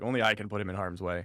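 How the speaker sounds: ordinary talk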